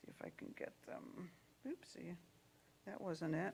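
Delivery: soft whispered voice.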